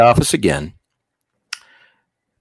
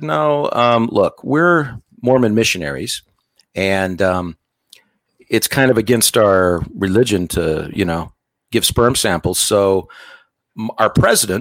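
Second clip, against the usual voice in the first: ordinary talk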